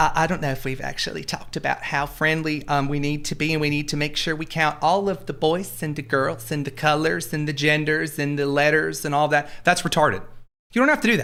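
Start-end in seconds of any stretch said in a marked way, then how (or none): 0.0-9.5 mocking, put-on slightly feminized voice. Speaker mocking a generic left-wing guy, in a mocking, slightly feminized voice. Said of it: "I'm kind of feminizing the voice just a little bit".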